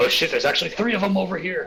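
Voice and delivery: high, loud startled exclamation.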